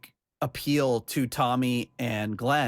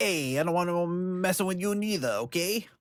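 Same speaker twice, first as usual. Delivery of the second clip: tough-guy mobster voice, pitched higher; 6 semitones higher than usual. Imitating how the other speaker read a lyric: imitating a mobster voice. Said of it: "you're like mobster".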